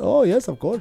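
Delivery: soft, high-pitched voice with Indian accent. Imagining talking cars, the speaker acts out ChatGPT replying: ChatGPT answering in Indian accent. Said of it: "can you talk to me in an Indian accent?".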